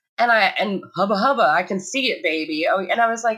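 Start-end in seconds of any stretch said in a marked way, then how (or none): 1.0-2.7 silly, goofy put-on joking teacher voice. Retelling what a teacher said to a child: imitating a teacher's goofy voice. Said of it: "he had made a goofy voice".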